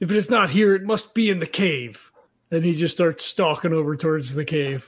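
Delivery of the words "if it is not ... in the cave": in-character calling out. Voicing a character calling out to the other two in a cavern: yelling out. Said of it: "he yells out and he says".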